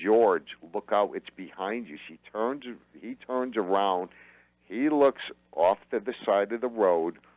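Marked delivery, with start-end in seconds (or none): none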